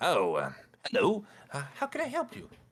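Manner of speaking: put-on very high, swooping, elderly gnome voice. Voicing a shopkeeper greeting a customer who enters: older gnome shopkeeper voice. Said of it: "older-looking gnomish individual pops up and says".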